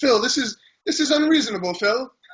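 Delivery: put-on English accent, very high. Retelling how an English training mate objects to him, in an English accent. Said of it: "is like in an English accent".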